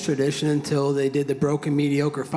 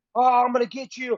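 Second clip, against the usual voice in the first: put-on scream, higher pitch; 12 semitones higher than usual. Speaker recounting a fight in Vegas, quoting a man screaming, retelling a screamed threat. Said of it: "still trying to scream at me".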